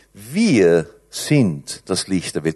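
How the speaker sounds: stress on WIR, slow and drawn out.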